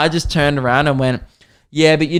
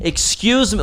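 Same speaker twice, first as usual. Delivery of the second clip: put-on brash, entitled, loud, obnoxious calling voice, pitched up; 6 semitones higher than usual. Retelling someone on a flight calling the male attendant over, imitating a loud, obnoxious voice. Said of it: "like so loudly and obnoxiously".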